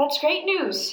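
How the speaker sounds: strained, unconvincing cheer. A woman answers the other speaker's news, with forced, failing cheerfulness. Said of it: "trying her best to sound cheerful but ultimately failing".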